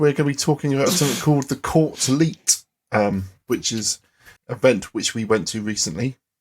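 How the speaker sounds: serious tone.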